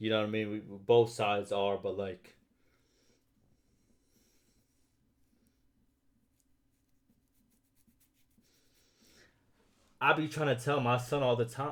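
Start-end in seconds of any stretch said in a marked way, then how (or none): 1.8-11.7 teary voice, welling up, on the verge of crying. Speaker talks about a difficult relationship with family, about to cry. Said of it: "I'm about to cry".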